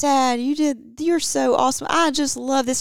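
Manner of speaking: very loud, high, gushing, sweet-talking flattering voice. Retelling what the kids say when they come in: imitating a flattering kid. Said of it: "the kids will come in and say".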